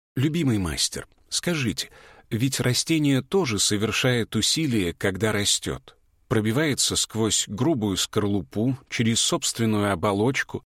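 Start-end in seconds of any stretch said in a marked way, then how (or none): none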